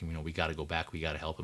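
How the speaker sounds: plain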